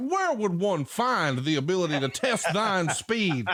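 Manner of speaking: put-on Southern drawl cartoon voice. Retelling what the other person replied, in a southern drawl cartoon voice. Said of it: "a cartoon character with a Southern drawl".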